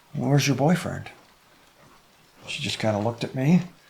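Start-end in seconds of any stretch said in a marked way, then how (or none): 0.1-1.1 soft, hushed, secretive half-whisper. Retelling what was said to a nearby doe: retelling a half-whisper. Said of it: "And I whispered to her".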